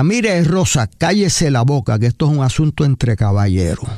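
normal talking voice

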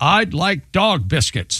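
put-on slow, confident little-kid voice. Retelling a son's order at a restaurant counter: imitating an enthusiastic, confident four-year-old. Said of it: "with all the enthusiasm of a very confident four-year-old".

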